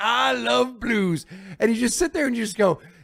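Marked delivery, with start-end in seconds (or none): 0.0-1.3 jokey, teasing rich-guy voice. Imitating a billionaire owner on a bar stage, mocking a billionaire blues fan.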